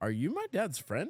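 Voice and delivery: big sharp pitch rise at the end on friend. Retelling how someone at the door questioned him, rising pitch at the end. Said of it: "with the total at the high at the end".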